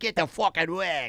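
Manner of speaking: put-on Australian accent. Imagining a phrase an Australian would never say, in an Australian accent. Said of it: "You never hear an Australian go".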